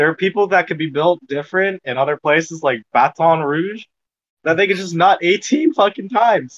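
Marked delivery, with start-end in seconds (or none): 2.9-3.8 Baton Rouge said in French accent, slightly raised pitch. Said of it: "with a bit of a French accent".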